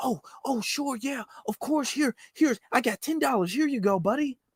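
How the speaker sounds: play-acted, high, overeager, desperate, tripping over words. Acting out the friend desperate to make a friend: imitating a desperate eager friend. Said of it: "the friend who's desperate to make a friend".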